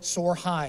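ordinary talk

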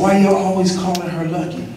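ordinary delivery

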